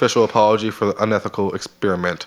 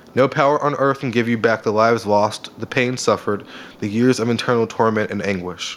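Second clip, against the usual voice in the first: ordinary talk, nothing marked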